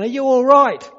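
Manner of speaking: high, loud call. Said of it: "he calls down".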